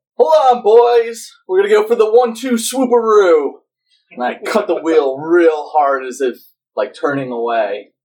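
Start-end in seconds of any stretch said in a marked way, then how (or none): 0.2-3.6 very high, loud shouted yell. Playing a character steering a ship, calling out to the boys: yelling out. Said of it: "I yell out".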